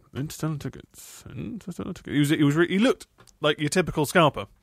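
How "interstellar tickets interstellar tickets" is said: put-on mutter under the breath, lower and quieter. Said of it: "he was just kind of under his breath".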